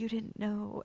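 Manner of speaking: almost a half-whisper, very soft and delicate. Retelling how Sam spoke to the monster: imitating Sam almost half-whispering. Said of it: "almost whispers".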